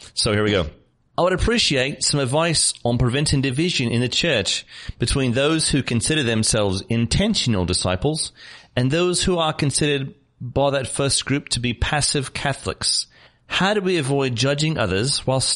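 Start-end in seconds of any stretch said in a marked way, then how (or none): 1.2-15.4 really bad, clumsy put-on British accent. Reading a listener's question aloud for a chuckle, in a really poor British accent. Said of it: "read this in a really poor British accent".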